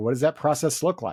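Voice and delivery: ordinary delivery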